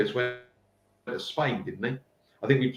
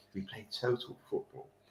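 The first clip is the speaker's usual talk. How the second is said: very hushed, very quiet, posh delivery; 3 semitones lower, 13 dB quieter than usual. Retelling a teammate's wind-up line to opposing players: imitating a posh voice. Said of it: "he had a very posh voice, my mate".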